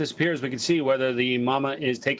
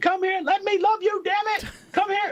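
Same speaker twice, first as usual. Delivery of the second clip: very high-pitched, frantic, squealing scream. Retelling how the wife screams at a cat she hugs: imitating wife screaming. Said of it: "it and scream".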